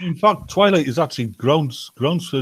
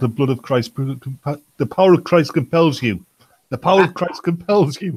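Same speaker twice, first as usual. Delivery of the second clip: ordinary talk, nothing marked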